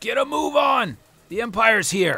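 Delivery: shrill, very high, loud yell. Voicing a character who yells to the driver: yelling up to the driver. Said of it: "he yells up to the driver".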